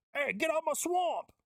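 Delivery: horrible, very high-pitched Scottish ogre voice, badly done. Speaker imagining a voice coming out of a diaper, doing a bad Shrek impression. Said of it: "that was a horrible Scottish accent".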